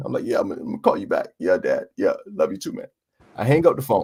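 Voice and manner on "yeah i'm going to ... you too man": low voice, crackling, barely holding together. Retelling the call about his dog, the speaker talks to his dad, imitating a cracking voice. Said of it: "my voice is crackling".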